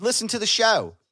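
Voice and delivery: put-on full-on scream, loud and high-pitched. Showing how to yell about the show at someone at Wawa, screaming. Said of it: "why are you screaming".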